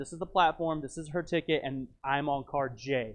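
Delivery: plain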